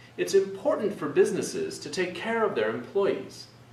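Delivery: pitch lifted on important, businesses, care, employees. Showing how to add gestures to your voice: pitch up on important, businesses, care, employees. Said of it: "I raised my voice, the pitch of my voice, on important, businesses, care, employees".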